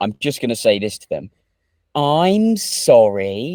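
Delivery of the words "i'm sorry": heavy dripping sarcasm, pitched up high. Show how you will answer someone trying to cancel you for a joke: a put-on really sarcastic apology. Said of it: "Like fucking really sarcastic".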